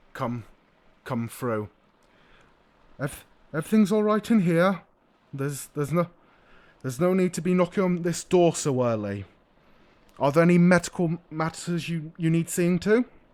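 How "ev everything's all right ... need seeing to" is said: slightly muffled, stumbling, raised voice. A character answers early knocking from behind a closed door; slightly muffled. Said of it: "you hear a slightly muffled voice".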